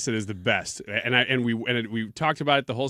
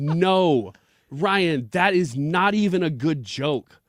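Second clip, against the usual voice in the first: mock angry reaction, pitched higher; 6 semitones higher, 3 dB louder than usual. Retelling how a wife reacted to a joke: imitating an angry wife. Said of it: "she got visibly angry at me".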